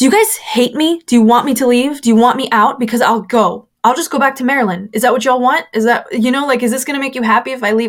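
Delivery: acted hurt, distressed, upset shouting outburst. Retelling a meltdown in front of church leaders: imitating her own upset shouting.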